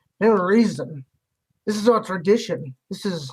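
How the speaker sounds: annoyed, irritated character voice. Voicing a hunting-party local who gives the players a dirty look: annoyed hunting camp NPC. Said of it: "gives you kind of a shitty look".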